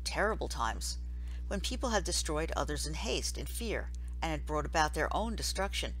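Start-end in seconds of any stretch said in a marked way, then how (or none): none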